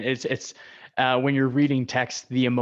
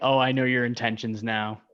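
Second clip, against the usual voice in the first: ordinary delivery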